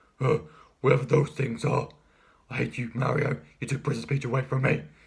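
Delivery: wicked, evil villain voice. Doing Bowser's lines to Mario, evil villainous Bowser voice. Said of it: "he sounds so like evil and villainous".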